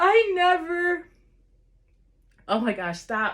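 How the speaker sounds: choked-up, high voice on the verge of crying. Recounting Stone Cold Steve Austin and McMahon in the ring to viewers, choking up near tears. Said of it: "I'm gonna cry right now".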